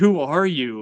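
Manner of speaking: acted, mock yelling. Recounting a story, the speaker quotes the angry wife, retelling a yell. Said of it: "She yells".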